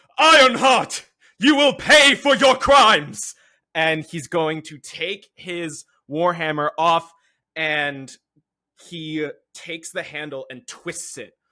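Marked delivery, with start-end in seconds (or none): 0.2-3.4 very loud, high-pitched roaring bellow. A character pulls his warhammer from his belt and bellows at Ironheart. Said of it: "he bellows".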